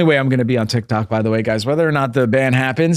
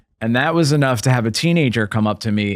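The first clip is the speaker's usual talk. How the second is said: plain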